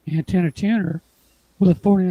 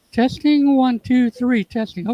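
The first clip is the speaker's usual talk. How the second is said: lifted, pitched-up, high voice; 6 semitones higher than usual. Mic test while the voice is breaking up: higher-pitched voice. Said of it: "if I raise my voice up to a higher pitch".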